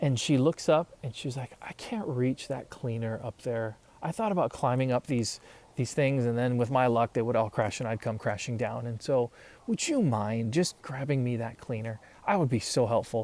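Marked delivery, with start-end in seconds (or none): none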